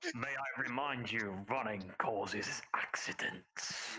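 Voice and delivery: dread-inducing voice. Retelling the voice that called from behind them, in a dread-inducing voice. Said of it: "this fucking dread voice from behind them".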